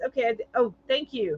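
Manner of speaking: plain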